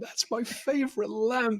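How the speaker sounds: very high, tearful, drawn-out laughing wail. Retelling how he reacted to his broken lamp: imitating someone cry-laughing. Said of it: "cry laughing".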